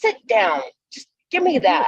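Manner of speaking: put-on bossy motherly voice. Retelling helping someone with a collar, put-on mom voice. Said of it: "put my mom voice on".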